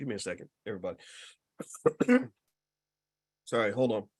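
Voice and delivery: quiet, choked voice, choking and breaking off. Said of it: "sorry, I'm choking".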